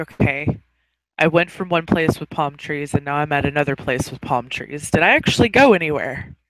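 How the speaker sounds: ordinary talk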